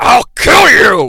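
heavy smoker's voice. Describing how an aging actor voices Optimus Prime: Optimus Prime Marlboro Red voice. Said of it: "fucking Marlboro Red".

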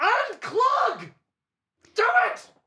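swooping, very high, loud shriek. Playing a character screaming into the hopper: screaming. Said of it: "And just scream at it".

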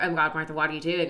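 plain

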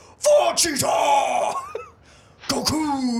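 very high, swooping Japanese announcer voice. Recalling the background announcing during a movie, the speaker does a Japanese announcer voice. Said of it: "So Japanese voice where they're just like".

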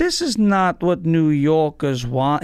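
very slow, every word stretched out. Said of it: "He's so slow".

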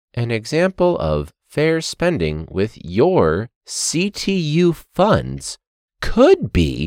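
very slow, overly careful, patronizing talking-down voice. Mimicking how they talk slowly to us about spending funds: imitating slow talk. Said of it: "they're talking slow to us the entire time, like ... that's how they're talking to us".

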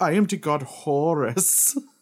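put-on German accent, high-pitched and slow. Retelling a story about the god Horus, the speaker does Horus with a German accent. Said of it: "Horus has like this German accent".

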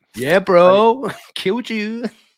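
very loud, shrill, booming put-on American accent. Acting out someone on Xbox chatting with American players, in a put-on American accent. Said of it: "you started talking American".

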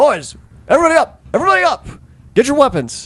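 very high, booming, rousing commanding shout. Game master voicing a character who wakes and rouses the troops. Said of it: "he rouses the troops and is like".

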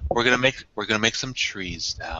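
soothing, therapeutic, gentle, sleep-inducing voice. Retelling falling asleep to a TV painter: soothing Bob Ross voice. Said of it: "The soothing, therapeutic voice, just like".

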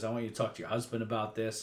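mock condescending tone. Recapping a scene, the speaker quotes Tony addressing her, imitating Tony's condescending tone. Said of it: "Tony very condescendingly says".

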